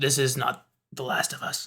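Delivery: gurgling, muffled voice. Voicing a stabbed hobgoblin lieutenant holding his neck: gurgling muffled voice. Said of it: "he kind of gurgles out into the, uh, um, m-, mu-, uh, muffled voice".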